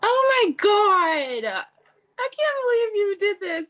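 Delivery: ugly crying through words, very high sobbing. Reacting to a touching request made by others: ugly crying while talking. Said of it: "I'm like ugly crying".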